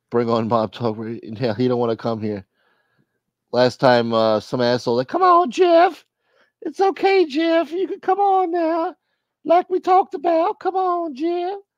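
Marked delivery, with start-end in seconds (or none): 5.0-11.6 very high-pitched cartoon voice. Retelling someone coaxing Jeff to come on, in a Mr. Hankey-like voice. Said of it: "You sound like Mr. Hankey from South Park when you with that come voice".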